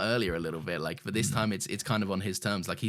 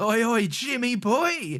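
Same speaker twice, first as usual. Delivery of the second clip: very high, loud, drawn-out, stretched calling out; 14 semitones higher, 6 dB louder than usual. Retelling a scene where a character greets a man fishing: imitating Graham. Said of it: "the way Graham walks up and goes".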